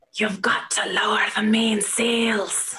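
whispered voice. Game narrator voicing something on the ship that only one player hears: whispering. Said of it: "you start to hear something whispering to you".

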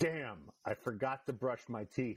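sudden, thoughtless-sounding blurted remark. While the audience waits during a scene, the speaker's dad blurts: way too loud. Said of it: "says way too loud".

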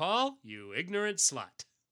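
slow, drawn-out put-on comedy voice, swinging pitch. Reading a listener's letter aloud, answering its author: Dan Aykroyd voice. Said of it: "I put on my best Dan Aykroyd voice".

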